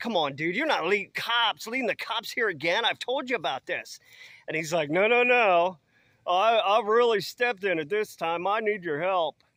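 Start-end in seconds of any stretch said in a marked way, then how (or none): 0.0-4.0 mild, acted-out half-yell. Retelling yelling at a man who came running up to the deck, retelling own yelling. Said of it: "I start yelling at him like".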